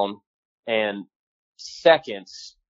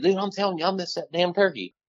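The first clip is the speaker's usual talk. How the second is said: put-on, high, livid, worked-up angry tone; 8 semitones higher, 5 dB quieter than usual. Retelling insisting to his hunting companion that he missed, retelling an angry outburst. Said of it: "I'm beyond pissed".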